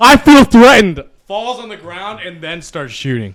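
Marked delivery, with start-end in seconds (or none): 0.0-1.0 shrill scream at the top of the lungs, very loud. Retelling a shove outside a gas station: imitating someone screaming. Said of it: "the guy starts screaming".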